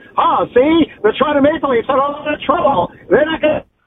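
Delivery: put-on old-timey 1920s voice. Offering the guys an old-school bit, in a 1920s old-timey voice. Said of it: "Do you want me to do like a 1920s voice?".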